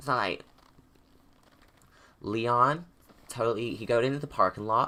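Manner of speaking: attempted, put-on American accent. Asked to say something in American, giving an attempted American accent. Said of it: "Ask me to say something in American".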